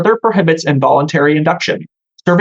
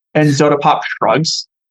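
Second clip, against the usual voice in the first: plain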